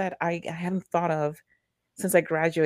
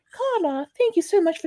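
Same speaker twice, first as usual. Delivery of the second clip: put-on very high, failed Irish accent drifting Welsh; 13 semitones higher than usual. Imagining a letter from Aisling Bea, Aisling Bea in a Welsh accent. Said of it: "That's my Welsh accent".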